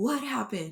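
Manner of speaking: furious, angry, demanding tone. Retelling a husband storming in to ask what happened: imitating an angry husband. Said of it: "And he was angry".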